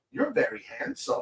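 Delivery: put-on thick Chinese accent. Retelling what a saleswoman said at a Comic-Con booth: imitating thick Chinese accent. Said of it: "She was very thick Chinese accent".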